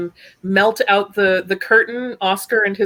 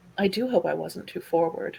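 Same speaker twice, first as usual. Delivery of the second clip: soft-spoken, very quiet and hushed; 3 semitones lower, 9 dB quieter than usual. A woman leans in to offer her hand to Lord Cross, very quiet. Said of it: "she says very quietly".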